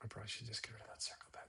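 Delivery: hushed whisper. Talking to the listener while working with a tiny brush: whispering. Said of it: "don't know why I'm whispering".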